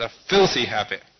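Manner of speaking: very loud, booming voice delivered at top volume. Recalling a man's words to the speaker, retelling a very loud voice. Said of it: "in a very loud voice".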